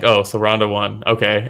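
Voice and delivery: mock offhand indifference. Retelling the guest's reaction to seeing who wins: imitating an indifferent demeanor. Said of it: "the demeanor of it was just like".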